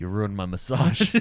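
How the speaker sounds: very low, dropped-down villain voice. Joking about Darth Vader's gaming room: imitating Darth Vader. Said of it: "He's like".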